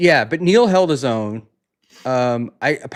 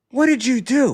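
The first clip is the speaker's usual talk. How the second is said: accusing, high-pitched. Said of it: "she goes".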